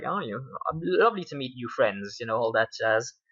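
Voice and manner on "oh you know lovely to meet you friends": put-on cheerful, delighted, very happy tone. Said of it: "very happy 'cause it's his wedding day".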